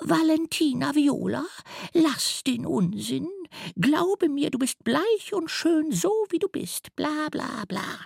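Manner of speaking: high, disguised, lofty put-on mother voice. A story character keeps talking in a disguised voice. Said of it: "Sie spricht mit verstellter Stimme weiter".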